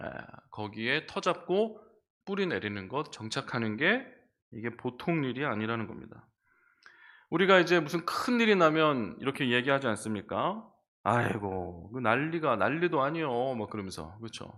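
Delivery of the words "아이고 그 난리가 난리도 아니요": put-on Korean Chungcheong dialect accent. Speaker quoting what people say after a big disaster, put-on Chungcheong dialect. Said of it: "약간 충청도 사투리가 좀 어울리는데".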